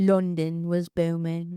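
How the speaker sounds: put-on East End London accent. Telling a history story about 1888, repeating the opening line in an East End London accent. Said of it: "Is that your East End accent?".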